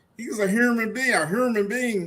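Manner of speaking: put-on plain Baltimore accent, H leaned on in "human". Showing how a woman from Baltimore pronounced a word, imitating her Baltimore H. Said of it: "she Baltimore... the way she pronounced that H".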